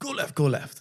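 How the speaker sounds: heavy North London Cockney accent.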